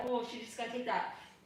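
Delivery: plain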